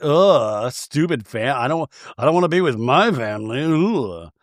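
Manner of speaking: put-on dismissive, sneering, scornful mocking tone. Retelling how another cast member mocked the complaint: imitating an eye-rolling mock. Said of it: "she kinda rolls her eyes like".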